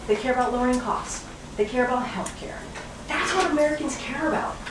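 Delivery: high, incredulous and exasperated.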